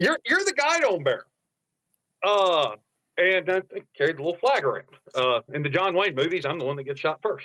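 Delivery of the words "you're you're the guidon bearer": put-on angry man's yell, higher. Retelling getting off the bus: imitating an angry yelling man. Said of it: "all angry and yelling at us".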